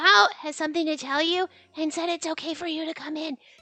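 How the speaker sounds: hushed whispering. A quiet Zashiki Warashi peeks out of the building to pass on a message: whispering. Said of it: "so I have to whisper".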